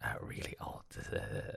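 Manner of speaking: put-on very old, low, whispered snake voice.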